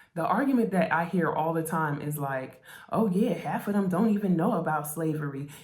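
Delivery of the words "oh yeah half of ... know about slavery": smug, talking-down, condescending tone with a chip on shoulder. Retelling an argument people often make: imitating a condescending tone. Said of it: "with such a, a chip on their shoulder".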